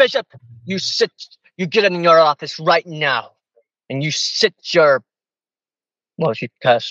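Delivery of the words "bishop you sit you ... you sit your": put-on angry voice, pitched higher. Retelling how Kate ordered the bishop into his office: imitating Kate's angry outburst. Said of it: "Kate, just calm down".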